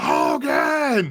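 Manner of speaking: high screaming call. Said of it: "he's screaming".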